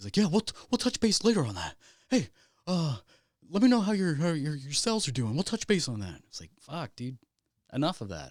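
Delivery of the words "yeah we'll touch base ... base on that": mock over-positive cheerfulness, much higher pitch. Mimicking a man who kept repeating the same phrase, imitating fake over-positive tone. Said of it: "way too positive in a fake way".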